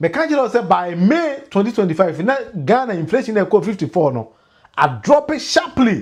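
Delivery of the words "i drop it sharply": "sharply" stressed, said slow and high. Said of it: "Underline the word sharply".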